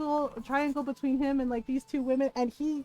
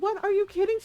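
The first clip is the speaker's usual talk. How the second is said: put-on mad, incredulous, pitched-up angry disbelief; 7 semitones higher than usual. Retelling a cousin's reaction to waiting a week: imitating someone angry. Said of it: "my cousin got so mad".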